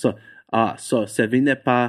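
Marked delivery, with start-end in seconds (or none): none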